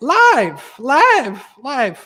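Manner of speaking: voice breaking as it goes. Host opening a live episode of the show, voice cracking. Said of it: "My voice is cracking now".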